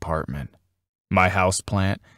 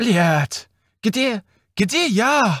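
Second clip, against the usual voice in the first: very high, frantic, panicked shouting cry; 13 semitones higher than usual. A plastic potted plant from Russia is pulled from a box, panicked shout. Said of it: "shouted the plastic potted lobelia from Russia with panic".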